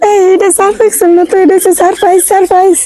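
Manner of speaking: playful, high-pitched voice.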